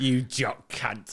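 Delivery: put-on done in English accent. Repeating the fans' insult in a put-on English accent. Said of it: "In a Bells Den accent".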